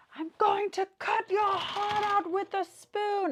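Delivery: very high, slow, drawn-out shout. Retelling a movie scene: imitating Alan Rickman shouting. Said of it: "Alan Rickman shouts out to him".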